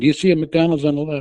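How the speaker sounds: insistent, loud, urgent shouting, repeated over and over. Retelling shouting directions at a barely responsive driver: retelling own yelling. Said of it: "I kept yelling".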